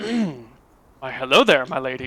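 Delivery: flirtatious character voice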